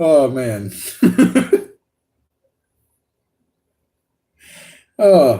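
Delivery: talking through laughter. Speaker who can't stop laughing at jokes, laughing while talking. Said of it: "I can't stop laughing".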